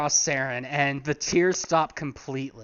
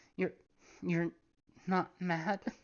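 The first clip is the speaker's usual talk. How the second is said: teary sniffling after crying, quieter; 3 semitones higher, 10 dB quieter than usual. Voicing a character who has just stopped crying: sniffling after crying. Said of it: "still sniffling and going".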